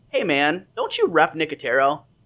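normal talking voice

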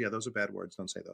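ordinary talk

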